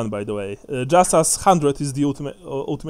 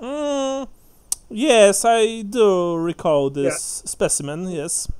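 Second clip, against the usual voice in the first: haughty, snobbish, very drawn-out drawl, pitched high; 6 semitones higher than usual. Voicing a barkeeper who answers a player about an elf: snobbish. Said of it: "He looks at you in a snobbish way".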